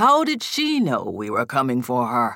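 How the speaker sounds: low, swooping, demanding growl. Narrator reading a constable's question in a ransacked room, growled. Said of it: "Vale growled".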